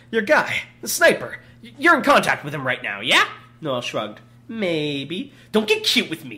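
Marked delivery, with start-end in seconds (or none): 5.5-6.3 low, snarling voice. A gunman holding a gun to a hostage's head warns a woman, snarling. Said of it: "Dragon snarled".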